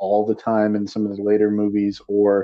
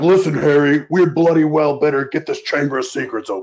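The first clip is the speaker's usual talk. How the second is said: blunt, pressing character voice with raised pitch; 6 semitones higher, 4 dB louder than usual. Joking about Ron Weasley's voice changing: deep-voiced Ron Weasley impression. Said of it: "It got super deep".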